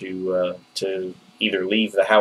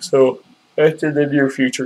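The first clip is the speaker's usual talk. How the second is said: words said through a yawn; 6 semitones higher than usual. Unable to stop yawning while talking about printer plans, yawning. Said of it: "I can't stop yawning".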